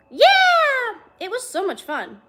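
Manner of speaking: very high, lively, animated, sing-song, swooping delivery. Reading a story aloud, a kid's line about the pool: animated. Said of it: "he said animatedly".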